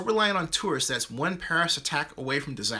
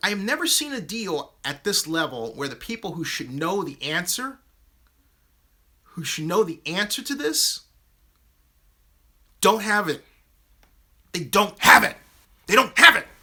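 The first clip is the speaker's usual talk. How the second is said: heated, worked-up angry rant, raised voice; 6 dB louder than usual. Complaining that those who should know the answer don't have it: getting mad. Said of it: "Sorry for getting mad".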